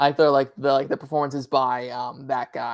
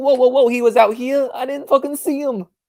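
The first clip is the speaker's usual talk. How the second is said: cartoonish, very thick New York accent, very high and loud; 10 semitones higher, 5 dB louder than usual. Retelling Adam Driver's gas station attendant scene: imitating his thickest New York accent. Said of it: "the thickest New York accent".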